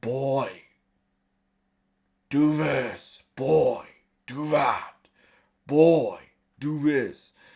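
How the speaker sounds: put-on very slow, loud gravelly drawl, boy dragged out. Arguing an actor suits the Kratos role for a show, gravelly deep Kratos voice. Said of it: "He has the the gravelly deep voice".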